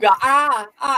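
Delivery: high, loud imitated baby babble.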